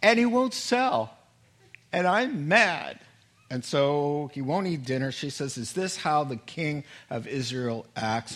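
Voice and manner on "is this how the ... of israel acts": plain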